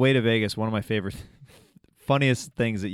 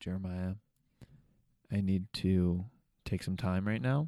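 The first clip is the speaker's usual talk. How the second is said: mock sincere, earnest tone, quieter; 7 dB quieter than usual. Retelling what Bobby said on the way back from Vegas: imitating a sincere tone. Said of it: "you looked at me very sincerely".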